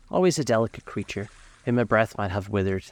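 ordinary delivery

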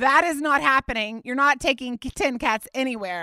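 ordinary delivery

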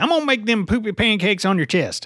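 high, skinny, nasty country voice. Speaker performs the voice just described to the other speaker, skinny country meth-head voice. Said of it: "I got the skinny and country down".

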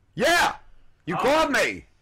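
very high, swooping, excited yell. Answering a phone caller who called back, shouting. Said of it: "why are you shouting?".

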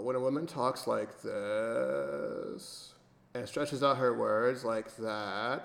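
creaky, crackling vocal fry, stretched words. Demonstrating what vocal fry sounds like, in vocal fry with stretched-out words. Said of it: "Case in point. ... that's called vocal fry".

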